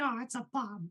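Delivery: squeaked up high, cartoon style. Quoting Jocelyn's favorite meme while cuddling with her, Mickey Mouse impression. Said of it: "this is my impression of Mickey Mouse".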